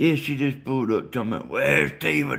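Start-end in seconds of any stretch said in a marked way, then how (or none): 1.5-2.4 put-on aged, rough-edged old voice. Retelling what she said when she just pulled up, in an old rough voice. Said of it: "In this old rough voice".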